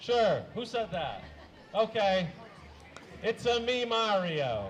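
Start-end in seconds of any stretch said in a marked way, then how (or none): 3.2-4.7 slow Italian-accented cartoon voice. Performer giving the audience a Super Mario impression, in a Mario voice. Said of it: "a uh, Super Mario impression?".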